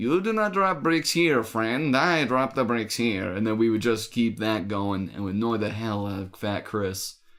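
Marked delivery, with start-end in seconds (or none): 0.0-3.3 exaggerated, laid-on-thick Eastern European accent. Speaker retells answering his boss about dropped bricks in a Borat accent. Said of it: "we'd always used to do like a Borat accent".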